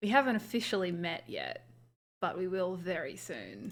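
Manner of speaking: hushed, imposing, sassy sing-song character voice. Voicing a character grinning at a foe: imposing, sassy in-character line. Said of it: "in a very, very imposing kind of way".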